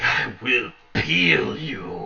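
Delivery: low, rough growled delivery. Narrating a game, a wounded enemy staggers back at the players: growling. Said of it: "he growls at you and he's like".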